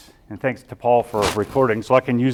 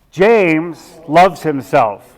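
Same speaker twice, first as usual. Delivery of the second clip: full, maximum intensity; 4 semitones higher, 5 dB louder than usual. Leading an affirmation exercise, saying it in third person: full intensity, level ten. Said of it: "Let's do this at a level ten".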